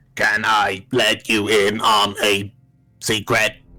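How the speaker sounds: robot voice whispering at full volume. Voicing a robot who whispers a secret with one volume setting: robot whispering at full volume. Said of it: "Clara has only one volume setting".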